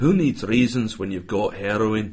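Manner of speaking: really bad, botched, put-on Scottish accent. Quoting a film line in a Scottish accent: awful Ewan McGregor impression. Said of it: "fucking awful Ewan McGregor impression".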